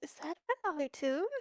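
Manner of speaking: whispered speech. Role-playing Bun Bun, peeking out from around Luke: Bun Bun whispering. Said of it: "and then he whispers".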